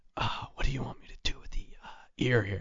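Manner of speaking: very quiet, hushed, close whisper. Retelling what someone whispered in his ear: imitating someone whispering. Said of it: "She leans over and whispers in my ear".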